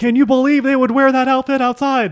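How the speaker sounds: very high, very loud, excited yell, mock yelled whisper. Mocking another speaker's gossip whisper: imitating a loud yelled whisper. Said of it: "you yell quietly".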